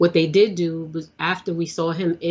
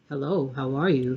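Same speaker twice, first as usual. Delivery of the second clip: voice dropped very deep and low; 4 semitones lower, 5 dB quieter than usual. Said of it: "Prince's voice was deep".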